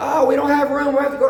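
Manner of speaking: mock very high, fast, frantic panicked screaming. Retelling how a man screamed in the plane while landing, retelling panicked screaming. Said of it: "He just started screaming".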